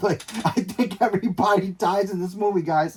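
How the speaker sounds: words broken up by laughter, laughing through them. Addressing the guys while hyping a movie, laughing while talking. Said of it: "I'm sorry for laughing".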